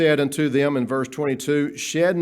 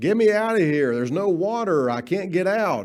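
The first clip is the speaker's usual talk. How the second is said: acted-out scream, higher; 4 semitones higher than usual. Acting out Joseph in the pit: imitating someone screaming. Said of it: "he's screaming to the high heavens".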